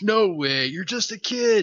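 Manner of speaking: high-pitched, slow cartoon tough-guy voice. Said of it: "Cam Clark-esque voice one more time".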